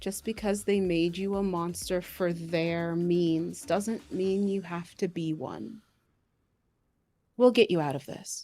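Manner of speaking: hushed whisper. She hugs DeAndre and speaks right into his ear, whispering. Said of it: "she just whispers in your ear".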